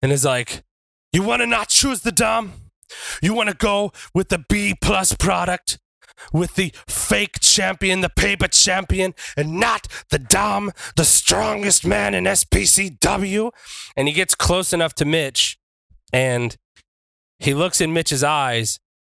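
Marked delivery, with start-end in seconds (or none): 1.1-13.5 loud, pitched-up taunting shout. Retelling a wrestler calling out his opponent before the crowd: retelling a loud shouted challenge. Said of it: "he shouts at him loud enough for the crowd to hear".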